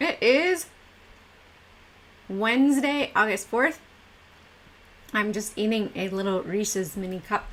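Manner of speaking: mouth full while speaking. Greeting everyone at the start while eating a peanut butter cup, mouth full of peanut butter. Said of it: "it's hard to talk when you have peanut butter in your mouth".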